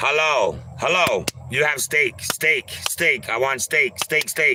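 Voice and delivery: curt, choppy bursts. Showing how you would talk so they understand, in abrupt short sentences. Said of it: "short sentences, abrupt".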